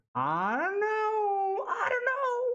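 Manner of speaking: very high, drawn-out howling dog noise.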